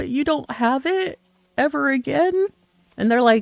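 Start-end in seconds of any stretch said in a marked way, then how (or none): 0.0-2.5 mock sad, high-pitched pleading. Retelling asking a store about tarts not coming back: imitating own sad question. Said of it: "but just sadly saying".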